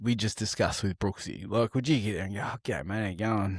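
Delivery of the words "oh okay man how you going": offhand, unbothered, cool, casual tone. Speaker shows a friend how to greet someone at the store, playing it cool. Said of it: "just play it cool".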